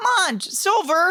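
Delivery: squeaky, very high-pitched voice. Showing how a former child star sounds in an animated movie, imitating a very squeaky voice. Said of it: "he was very squeaky voiced".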